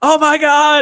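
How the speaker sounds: high, screamed exclamation. Retelling a shirtless man's FaceTime call in the cold, retelling a man's screaming. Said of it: "he's screaming without his shirt on".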